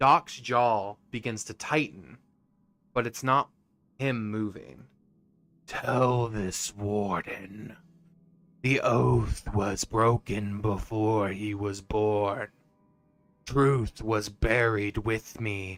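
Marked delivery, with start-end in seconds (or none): 5.7-15.8 harsh, raspy voice from low in the throat. Narrator voicing a presence speaking through Doc to the players: raspy voice. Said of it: "you all begin to hear this sort of like raspy voice".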